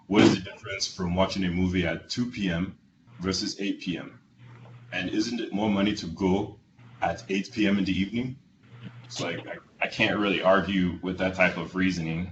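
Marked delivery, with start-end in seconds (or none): 0.1-8.4 put-on heavy Nigerian accent, laid on thick. Retelling a father's reply to a request to see a movie, thick nigerian accent. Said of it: "with his thick Nigerian accent".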